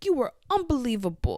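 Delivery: angry in a cute, adorable way. Retelling a show scene, imitating Shane, adorably mad. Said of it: "the way that Shane says "unbelievable" in this scene is so adorable".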